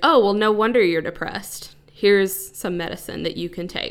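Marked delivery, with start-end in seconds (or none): none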